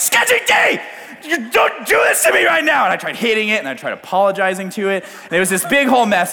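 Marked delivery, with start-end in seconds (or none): 0.0-2.8 play-acted, very high, yelled scolding telling-off. Retelling trying to get a truck that won't start going, now retelling yelling at it. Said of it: "And then I try yelling".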